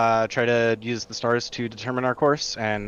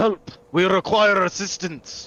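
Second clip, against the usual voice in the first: high, booming, amplified magical-sounding shout; 8 semitones higher, 4 dB louder than usual. Casting a spell to call out to a ship: booming magically loud voice. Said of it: "I'll try to boom my voice out".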